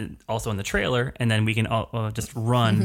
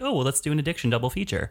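light, offhand, joking tone, acted out, pitched up; 5 semitones higher than usual. Retelling what Scott suggested while choosing a movie: imitating Scott's joking voice. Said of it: "in what I thought was a joking voice".

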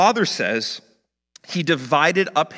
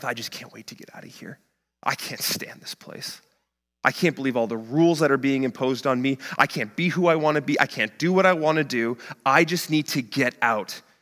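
put-on muttering under breath, complaining. Retelling a resentful son's thoughts while doing chores, imitating muttering under breath. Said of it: "he's muttering under his breath".

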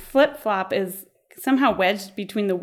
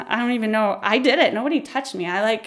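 plain

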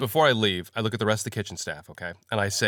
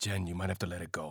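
very soft, gentle, quiet low murmur; 5 semitones lower, 13 dB quieter than usual. Playing a character in the game, speaking to Jen; said quietly. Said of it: "I say quietly".

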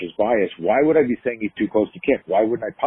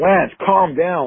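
put-on heartfelt, imploring pleading, pitched up; 8 semitones higher, 4 dB louder than usual. Retelling how a man balled his fists at him: retelling pleading with someone. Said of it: "Like I'm trying to really plead with him".

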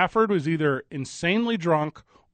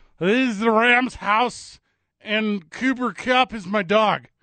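put-on drunk-sounding speech, high-pitched, slow and drawn out; 5 semitones higher than usual. Retelling a drunk parade speech: drunk Matt Stafford impression. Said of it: "Let me do an impression of it".

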